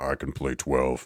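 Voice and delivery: faked, low, deep grown-up voice. Retelling a TV scene where the son answers: imitating a deep voice. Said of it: "His son responds in a deep voice".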